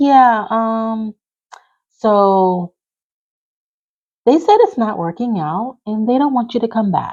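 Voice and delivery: put-on shy, halting, sheepish, slightly high, drawn-out "so". Retelling a man's phone call to the speaker, imitating him sheepish and shy. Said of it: "he's acting like all sheepish and shy on the phone".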